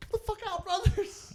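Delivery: loud high-pitched yelling.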